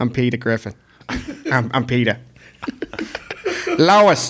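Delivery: big put-on cartoon voice, swooping pitch. Asked to do it into the microphone, speaking in a Peter Griffin voice. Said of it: "I gotta hear your Peter Griffin".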